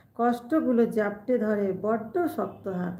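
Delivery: ordinary delivery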